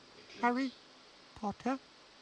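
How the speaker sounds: tiny, very high, quivering, trembling squeak. Back in his old masters' home, a petrified Dobby greets the boy, tiny quivering squeak. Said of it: "he squeaked, in the tiniest quiver of a voice".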